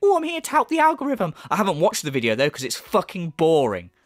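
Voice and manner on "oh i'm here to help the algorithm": high, fast, squeaky mock commenter voice. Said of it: "people in my comment section going".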